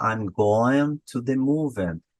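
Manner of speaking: strongest stress on going and on movie. Comparing word stress in portuguese and english, stress on going and movie. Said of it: "Going, movie. Eu tenho no começo e no final".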